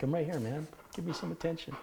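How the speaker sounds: high dog voice. Voicing the dog Jimmy while Lyle is being called: voicing the dog Jimmy. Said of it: "Jimmy's like".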